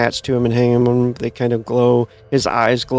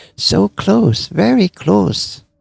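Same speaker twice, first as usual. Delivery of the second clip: put-on assumed Chinese accent, pitched high; 8 semitones higher than usual. Retelling a man's reply once the offer reaches a hundred: put-on Chinese accent. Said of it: "kind of like a Chinese accent type".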